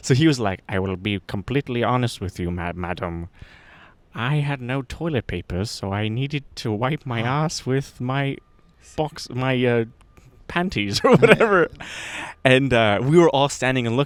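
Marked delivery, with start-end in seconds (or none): 0.7-11.7 mock, polite British accent. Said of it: "British people all sound like they're polite".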